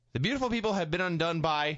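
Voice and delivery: ordinary talk, nothing marked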